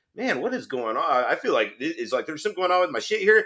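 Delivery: ordinary delivery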